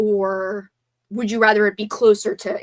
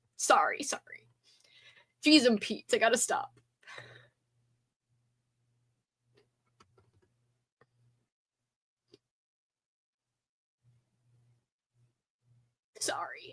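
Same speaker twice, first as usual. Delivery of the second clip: tearful, very quiet, hushed near-whisper; 10 dB quieter than usual. Getting upset while recounting a response they received, apologizing, teary. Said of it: "I'm getting teary again".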